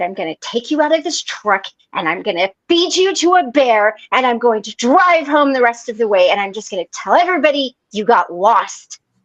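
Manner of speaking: imitated angry, mad outburst. Retelling a threat made to a husband while really mad: imitating angry threat. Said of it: "really mad because he was breathing wrong".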